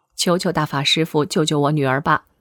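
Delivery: ordinary talk, nothing marked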